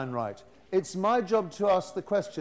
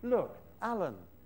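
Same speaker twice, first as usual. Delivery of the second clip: put-on coaxing tone, half encouraging, half pleading; 5 dB quieter than usual. Demonstrating how he says the boy's name, acting half-encouraging, half-pleading. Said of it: "half encouraging, half pleading".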